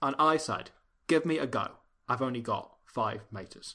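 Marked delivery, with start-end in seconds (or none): 1.1-3.7 put-on Cockney accent, quieter. Repeating a commentary line when asked to: Michael Caine accent. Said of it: "say that in Michael Caine's accent instead".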